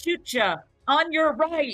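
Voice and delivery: high-pitched, loud shout. Running in to attack a centipede, in character: shouting a warning. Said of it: "I shout".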